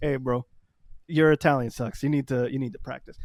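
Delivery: ordinary talk, nothing marked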